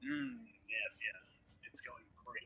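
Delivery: muttering indistinctly. Narrating a scene to a listener, voicing a woman, mumbling. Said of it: "she mumbles".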